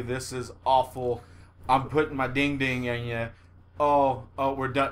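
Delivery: mock begrudging, reluctant tone. Acting out how a partner should not sound: mock begrudging.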